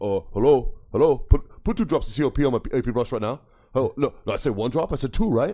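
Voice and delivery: loud, garbled, barely intelligible put-on Colombian accent. Retelling a run-in with a giant guy he could barely understand, doing an impression of him. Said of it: "I did a great impression of him".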